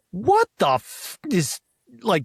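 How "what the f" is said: put-on high, lively, blurted outburst. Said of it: "proclaimed with a lot of vivacity".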